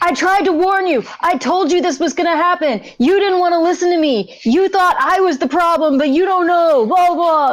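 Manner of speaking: high, rushed, frantic unravelling outburst. Voicing Lizzie as alarms go off, losing her mind. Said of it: "Lizzie starts losing her mind".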